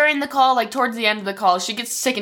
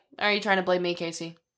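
mock blunt, level, quiet, flat deadpan monotone; 3 semitones lower, 7 dB quieter than usual. Retelling a mother's call to police about her missing daughter, imitating a flat monotone. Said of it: "she's just so like monotone about it".

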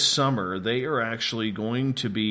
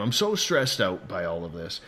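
normal talking voice

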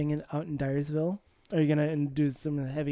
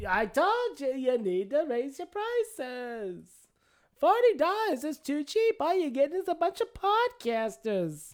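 put-on very high, swooping old New York woman voice; 11 semitones higher than usual. Play Dwyer's New York wife while he sits in a recliner, in an Edith Bunker voice. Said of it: "It's Edith Bunker".

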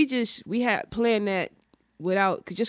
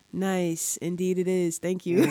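dull, flat, deadpan level monotone. Retelling how he answered a birthday greeting, imitating someone's flat monotone. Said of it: "he's so, like, monotone. He was just like".

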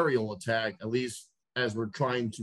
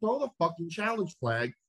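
raised, pitched-up, loud yelling; 6 semitones higher than usual. Retelling watching the game on television: retelling screaming at the tv. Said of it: "I'm streaming at the television".

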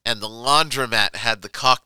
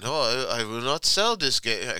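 vague put-on Mediterranean accent; 3 semitones higher than usual. Retelling a laundromat owner's refusal to sell: imitating a vague Mediterranean accent. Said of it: "some sort of Mediterranean nondescript accent".

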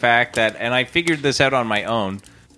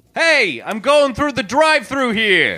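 very high, swooping character voice; 12 semitones higher, 4 dB louder than usual. Doing a funny impression of someone at a drive-thru: Dustin Hoffman impression. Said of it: "Or Dustin Hoffman".

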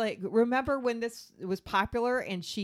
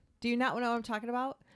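usual speaking voice

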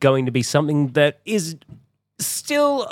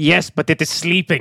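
put-on plain, matter-of-fact delivery in a German accent. Quoting a line from The Mandalorian: Werner Herzog German accent. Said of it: "you just get this great German accent of going".

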